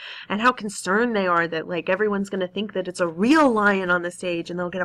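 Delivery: ordinary delivery, nothing marked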